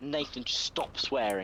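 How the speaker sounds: really stern, fatherly telling-off tone. Retelling what his dad said to him about swearing: imitating dad's stern voice. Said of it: "With a really stern voice and his finger".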